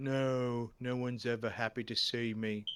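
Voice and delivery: gloomy, downcast, slow depressed voice. Trying out a game character as a depressed guy: depressed voice as Mister Derby. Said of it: "do him as, like, a depressed guy".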